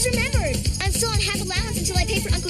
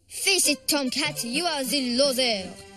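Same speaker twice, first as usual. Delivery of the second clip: bad fake French accent, much lower pitch; 7 semitones lower, 3 dB quieter than usual. Rejecting Tomcat in favor of Frenchie, bad fake French accent. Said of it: "that was the worst French accent I've ever heard".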